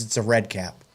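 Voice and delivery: short, curt, blunt, matter-of-fact delivery. Retelling a parent's insistence about the cap: imitating dad's curt delivery. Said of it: "just like that".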